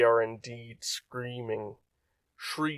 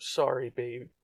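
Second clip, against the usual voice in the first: whispered, quieter; 5 dB quieter than usual. A mother embracing her daughter and apologizing: whispering. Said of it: "she whispers".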